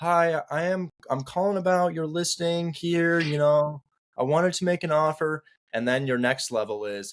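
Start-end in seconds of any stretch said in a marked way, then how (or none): 0.0-5.4 hesitant, stumbling, high, unsure voice. Showing how a beginner first calls about a listing, unsure voice on the phone. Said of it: "with really an unsure voice on the phone".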